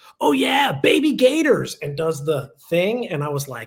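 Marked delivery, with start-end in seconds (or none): 0.2-1.8 put-on, shrill, very high and loud yell. Retelling a student breaking into a campus tour: imitating a student yelling. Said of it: "just yells at us and goes".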